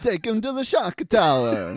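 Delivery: very high, loud, put-on Italian accent. Repeating a movie line after being told it needs an italian accent. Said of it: "That should be in an Italian accent".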